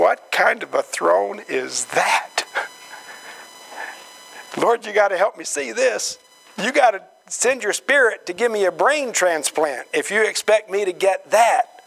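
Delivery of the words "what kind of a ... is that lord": usual speaking voice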